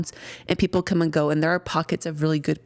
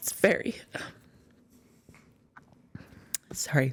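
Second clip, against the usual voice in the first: soft whisper through tears; 3 semitones lower, 7 dB quieter than usual. Opening a talk, apologizing for being emotional, crying while talking. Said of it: "We're already gonna start with crying".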